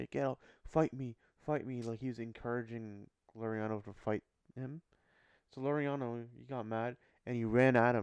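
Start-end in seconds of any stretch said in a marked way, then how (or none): none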